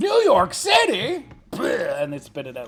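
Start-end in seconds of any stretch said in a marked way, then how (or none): 0.0-1.3 put-on over-the-top cowboy accent, very high-pitched. Acting out how cowboys around the fire would say it, in an exaggerated cowboy accent. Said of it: "talk in a in a in a in a cowboy accent".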